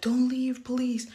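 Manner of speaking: high, loud crying and sobbing. Retelling begging him not to leave: imitating her own crying plea. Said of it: "I was over here crying and sobbing".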